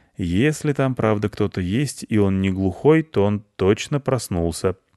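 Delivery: ordinary delivery, nothing marked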